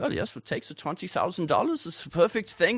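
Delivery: put-on German accent. Imitating how a person would react to a paid offer: german accent. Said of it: "We'll go on this German accent".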